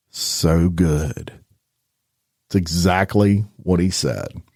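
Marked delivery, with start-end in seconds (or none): 0.1-1.3 put-on soft whisper, lower. Retelling what a man whispered in a woman's ear: imitating a soft whisper. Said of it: "he whispers in her ear".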